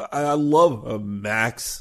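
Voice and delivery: words barely out, teeth chattering. Rossi, with a weapon pointed at his head, speaks to Max through chattering teeth. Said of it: "He barely got the words out through chattering teeth".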